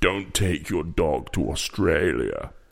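put-on low, flat impression voice. Recalling a famous apology video, in a Johnny Depp voice. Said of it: "That's Johnny Depp".

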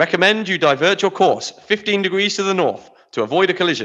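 put-on British accent, naval officer style. Acting out a radio exchange between ships, in a naval British voice. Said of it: "put on your best naval British voice".

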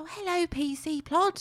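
lovely sweet storybook voice, very high, slow, drawn out. Retelling a Noddy story to a friend, in Noddy voice. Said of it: "it's a lovely voice".

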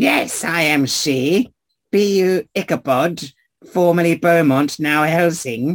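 put-on high-pitched old crone voice. The speaker voices Madame Eva answering a visitor who asked her name: Madame Eva crone voice. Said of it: "You're going to do that voice the entire conversation".

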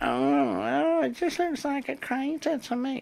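mock condescending, skeptical, patronizing voice. Mimicking skeptics who doubt the object, the speaker does a mocking mansplainer voice. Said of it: "I always do that voice when somebody's trying to fucking mansplain".

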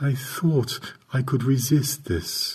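tired, drained, flat, lifeless monotone. Narrator reads a woman's reply to the narrator: low, flat, weary tone. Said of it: "Isabel's low tone sounded flat and weary".

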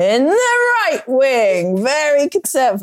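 high, hyped wrestling announcer call, wing drawn out. Speaker introduces the players in a trial, trying a wrestling voice. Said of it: "I could do this in a wrestling voice".

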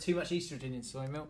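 ordinary talk

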